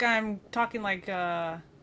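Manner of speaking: plain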